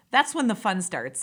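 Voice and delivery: thick, deliberate, heavy sarcasm. Looking back on a hard personal road, the speaker remarks: very sarcastic. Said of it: "I'm being very sarcastic when I say that".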